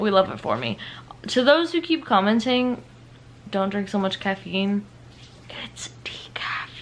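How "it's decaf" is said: hushed whisper, under the breath. Whispering something that isn't very on brand: whispered. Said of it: "I'm whispering it because that's not very on brand".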